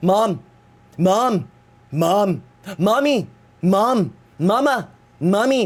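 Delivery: very slow, drawn-out, repeated calls. Retelling calling to a partner again and again, like Stewie from Family Guy. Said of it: "literally like Stewie from that one episode of Family Guy".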